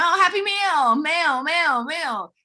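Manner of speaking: very slow, high, exaggerated twang on mail. Demonstrating her pronunciation for viewers, with a twang. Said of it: "I say it with kind of a twang".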